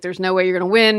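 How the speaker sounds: plain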